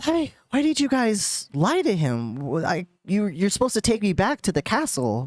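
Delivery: animated, swooping princess voice. Voicing the princess who confronts the players about lying: princess character voice. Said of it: "the princess ... and she's like".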